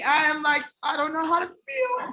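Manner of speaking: welling up, voice on the verge of crying. Thanking friends who congratulate her: on the verge of tears. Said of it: "Don't start crying".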